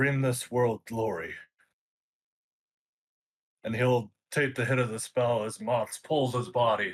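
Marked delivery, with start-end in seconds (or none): 0.0-1.3 spoken loudly. A player voicing his character's last words in a tabletop game, saying loudly. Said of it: "he just says loudly".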